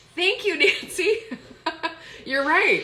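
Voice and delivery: loud, high-pitched speech through laughter.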